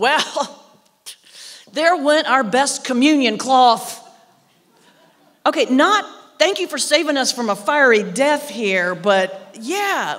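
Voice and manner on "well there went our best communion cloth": booming, very loud declaration. Retelling what she announced once the fire died down: very loud voice. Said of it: "announces in this very loud voice".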